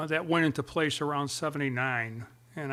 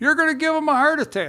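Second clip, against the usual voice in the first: put-on scream, higher and louder; 12 semitones higher, 9 dB louder than usual. Retelling how the mother screamed during a chase: imitating mother screaming. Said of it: "my mother starts screaming".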